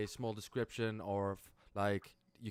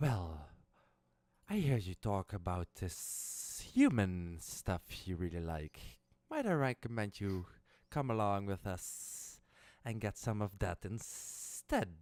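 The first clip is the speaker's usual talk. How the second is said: stage whisper, up close. Voicing a hidden figure speaking into a character's ear: whispering in the ear. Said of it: "you hear in your ear whispering".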